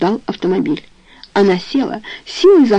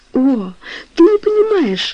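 high, sudden exclaiming cry; 9 semitones higher than usual. Toni answers her uncle Charles's question, exclaiming. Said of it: "воскликнула Тони".

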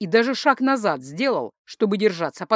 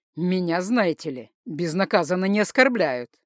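ordinary delivery

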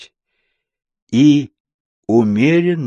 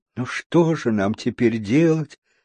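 usual speaking voice

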